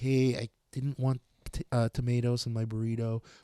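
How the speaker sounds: sweet, super nice, friendly, uncomplaining tone. Retelling how a man complained about tomatoes in his burrito, imitating a super nice tone. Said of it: "He would just say it re- like super nice".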